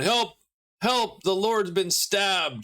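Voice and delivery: urgent, high yell. Narrating a scene, the storyteller voices a man yelling down for help. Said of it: "He yells down".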